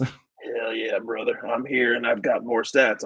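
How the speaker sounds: put-on monster truck rally announcer voice. A host introduces the [name] Stats segment on this episode, monster truck rally voice. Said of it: "The monster truck rally voice got you".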